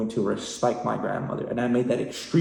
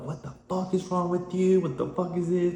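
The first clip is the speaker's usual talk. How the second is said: put-on scream, higher; 8 semitones higher than usual. Retelling screaming at a man who grabbed the phone: imitating own screaming. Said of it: "I started screaming at him".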